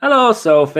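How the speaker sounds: very high northern English accent. Spotting Sophie and greeting her, in a northern English accent. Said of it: "I don't know why I said that in a northern accent".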